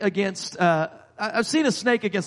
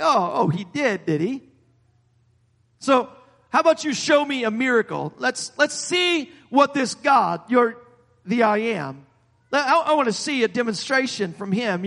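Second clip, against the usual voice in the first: sarcastic, scornful, mocking and doubting tone; 4 semitones higher than usual. Retelling the Pharaoh's challenge to Moses: imitating sarcastic Pharaoh. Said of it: "you can kinda sense the sarcasm in, in Pharaoh's voice".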